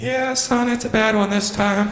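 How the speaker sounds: squeaky, very high helium-like voice. Retelling a phone call with his dad, giving the dad's reply in a high helium voice. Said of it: "sounds like the helium plant's leaking again".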